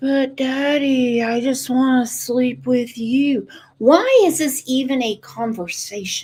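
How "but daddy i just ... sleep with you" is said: unsettling, creepy, eerie voice. Mimicking a man voicing his little girl, mocking a creepy voice. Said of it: "that creepy voice he uses".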